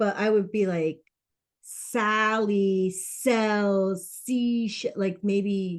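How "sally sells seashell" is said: slow, deliberate, unhurried, each word spaced out. Suggesting doing a tongue twister slowly: slow and deliberate. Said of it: "But like do it slow".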